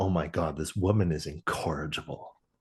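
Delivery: put-on mutter under the breath. Retelling what the doctor says about her: imitating muttering under his breath. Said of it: "under his breath".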